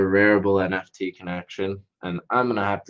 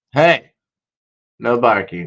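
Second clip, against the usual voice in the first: sudden, loud, scolding yell; 3 semitones higher, 8 dB louder than usual. Breaking off mid-explanation to stop the barking: yelling. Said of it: "I just yelled into the camera screen".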